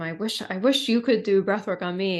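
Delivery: normal talking voice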